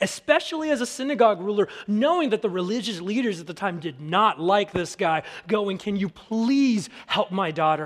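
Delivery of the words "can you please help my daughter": put-on desperate pleading voice. Retelling a synagogue ruler begging for help for his daughter, imitating pleading. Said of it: "pleaded and begged".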